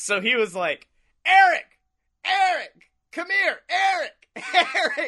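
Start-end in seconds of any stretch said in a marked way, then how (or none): 1.3-5.1 very high, drawn-out calling yell. Retelling how a tipsy man called people over at a bar, retelling a yell across the bar. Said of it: "he's yelling at people across the bar".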